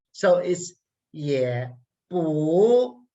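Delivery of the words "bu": bu said with rising second tone. Pinyin lesson on the second tone: rising second tone on bu. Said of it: "second tone, rising tone. It goes up".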